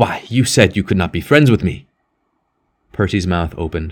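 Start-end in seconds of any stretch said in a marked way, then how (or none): 0.0-1.9 spoken angrily. John turns back at the door to answer Percy, angry. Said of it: "with heavy anger in his face".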